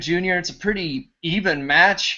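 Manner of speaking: ordinary talk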